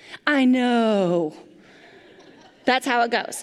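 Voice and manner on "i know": mock exasperated, frustrated teenager voice with sigh. Imitating a teenager brushing off a parent: imitating a frustrated teenager. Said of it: "and a dramatic eye roll".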